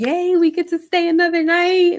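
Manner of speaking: play-acted giddy, excited cheer, pitched high. Imitating a contestant cheering about staying another night: imitating excited cheer. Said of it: "So you over here excited".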